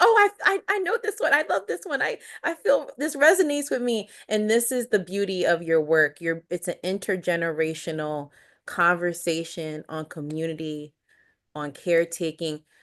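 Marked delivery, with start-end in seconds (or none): 0.0-4.1 put-on very high yelling, called out from a distance. Thanking the interviewee and describing her mom in the background, imitating mom yelling answers. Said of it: "yelling out her answers to your questions".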